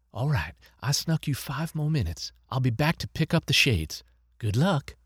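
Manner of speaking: hushed whisper. A nurse speaks to two nursing-home residents at the console, whispering. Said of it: "as Nurse [name] removed their VR shades, / as Nurse [name] removed their VR shades, / as Nurse [name] removed their VR shades, / The voice seemed to be coming from everywhere".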